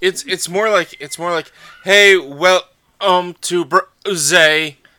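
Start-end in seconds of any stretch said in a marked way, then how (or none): 1.8-4.7 loud, very slow, choppy, skipping, glitchy dropped-word delivery. Imitating another speaker's glitchy recording: imitating skipping audio. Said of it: "it was skipping you every, every so often".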